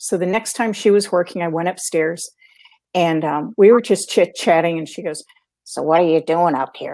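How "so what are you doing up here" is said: low, deep, throaty voice. Retelling what a woman asked when the speaker went upstairs, deep throaty voice. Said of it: "Deep throaty voice for her".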